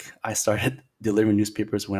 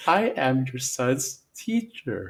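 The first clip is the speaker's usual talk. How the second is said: very slow, over-enunciated teacher voice, words spelled out; 4 semitones higher than usual. Retelling a reading teacher's first greeting: imitating teacher speaking very slowly. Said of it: "the teacher said to me very slowly".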